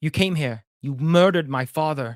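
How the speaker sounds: weird, bad fake British accent. Retelling a movie scene, voicing a character in a terrible British accent. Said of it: "I'm doing a weird, dumbass, terrible British accent".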